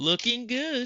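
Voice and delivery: cheeky, cocky cartoon hero voice, very high and loud. Quoting a video game line after a task: Sonic the Hedgehog impression. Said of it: "in my best Sonic the Hedgehog, Sonic Unleashed impression".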